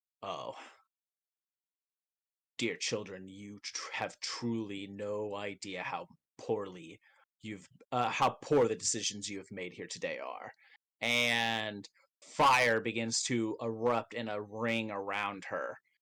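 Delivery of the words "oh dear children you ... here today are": voice trembling with furious rage. Voicing Tia Dalma as she turns on the party: shaking with anger. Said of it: "kind of shaking and angry, and she looks at all of you and says".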